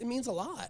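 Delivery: choked-up, teary voice, words catching. Thanking the local business owners for their support, tearing up. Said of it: "I'm tearing up right now".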